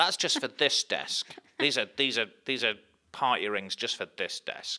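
mock possessive, petty protesting tone, high and loud. Acting out a coworker upset over a taken snack: imitating a petty coworker. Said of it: "You sounded so petty then".

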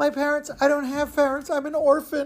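put-on crying, very high-pitched. Retelling a boy claiming to the ticket seller he's an orphan: fake crying. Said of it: "he starts to let out some fake tears".

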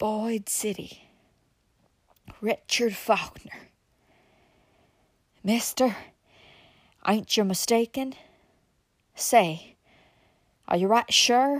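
choked, gasping voice in awe and terror. Reading a story aloud, the narrator gives the moonshiner's reply in a gasping, choking voice. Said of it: "the moonshiner gasped in a choking voice".

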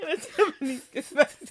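talking through laughter.

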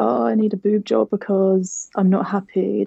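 play-acted, tearful, choked crying voice. Retelling a phone call to mum, imitating own crying. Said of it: "being like crying on the phone".

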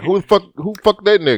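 mock tough, playfully aggressive tone. Acting out the coworker asking about a visitor: imitating an aggressive coworker. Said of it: "was he aggressive?".

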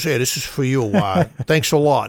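words pushed past a big cigar. Retelling how a customer with a cigar in his mouth handed over a tip: imitating a man talking around a cigar. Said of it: "that's how he talked, too".

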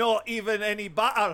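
loud fake Scottish accent. Giving a review of haggis in a put-on scottish accent. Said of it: "I've got a Scottish one here. I'm not so sure how good my Scottish accent is, so I will give it a go".

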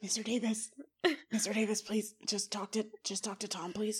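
put-on whispering. Retelling how someone pleaded to a man on the phone, imitating someone whispering. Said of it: "he just like whispered".

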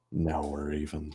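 very quiet, hushed half-whisper under the breath. James peers down the elevator shaft, half-whispering to himself. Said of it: "peers down the elevator shaft and whispers to himself".

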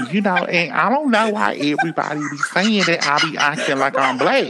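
put-on high, slangy girl voice. Telling friends about a girl on TikTok, imitating a TikTok girl's talk. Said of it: "she talks like this, and she be like".

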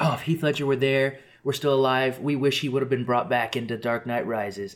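ordinary delivery

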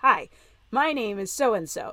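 usual speaking voice

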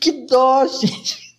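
awkward, embarrassed, uneasy laughing. Speaker reacts while telling an embarrassing story, laughing awkwardly. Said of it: "eu tô rindo bem de sem graça".

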